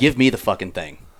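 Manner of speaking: put-on angry, pissed-off outburst. Retelling how a friend demanded the computer: imitating an angry outburst. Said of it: "this is how you know Andy's pissed".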